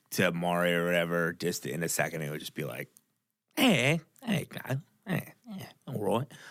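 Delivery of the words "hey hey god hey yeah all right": clumsy, unconvincing, bad put-on Irish accent. Imitating a father talking with a relative from Ireland: bad imitation of Irish accent. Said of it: "I can't do it at all. I am really bad at it".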